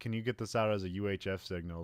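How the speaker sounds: ordinary delivery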